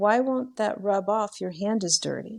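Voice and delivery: completely innocent, guileless little voice. Retelling what a boy said while rubbing the speaker's hand, in his most innocent voice. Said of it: "in the most innocent voice".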